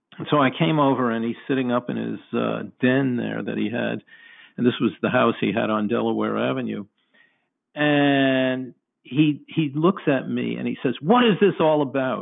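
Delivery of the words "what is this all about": acted, very angry, demanding voice. Retelling what a man in his den asked, in a put-on angry voice. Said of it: "In a very kind of angry voice".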